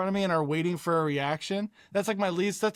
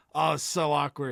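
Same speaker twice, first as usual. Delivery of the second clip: ordinary talk, nothing marked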